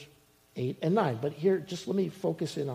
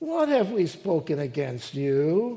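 loud, swooping, drawn-out, dripping with sarcasm; 6 dB louder than usual. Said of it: "with sarcasm".

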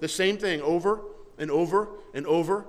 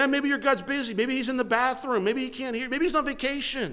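teasing, mocking ridicule, pitched up; 7 semitones higher than usual. Retelling Elijah taunting the prophets of Baal: imitating Elijah mocking. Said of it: "Elijah's making fun of them the whole time".

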